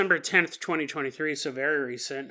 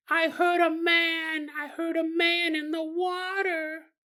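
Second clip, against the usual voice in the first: put-on very high little girl voice, word "man" drawn out; 12 semitones higher than usual. Retelling what the girl told her daddy, imitating the girl's voice. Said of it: "let's stop doing that voice".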